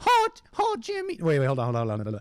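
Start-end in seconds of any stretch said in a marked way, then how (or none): 0.0-1.2 put-on cartoon kid voice. Trying a first impression after naming the character: Carl Wheezer voice. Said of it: "Carl Weezer from Jimmy Neutron".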